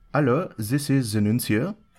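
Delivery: absurd, ridiculous put-on French accent. Retelling a phone caller claiming to be the nuncio, in a ridiculous French accent. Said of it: "that's a ridiculous French accent".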